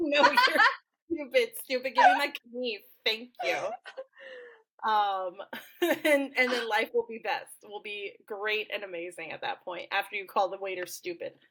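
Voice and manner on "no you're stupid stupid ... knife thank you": high, loud, sassy laughing delivery. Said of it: "you're gonna be like".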